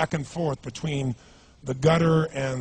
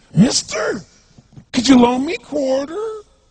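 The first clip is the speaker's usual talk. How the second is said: bizarre, weird, put-on voice, much higher and louder; 7 dB louder than usual. Retelling what a man who came close to the speaker said, bizarre put-on voice. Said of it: "He had this really bizarre looking sounding voice".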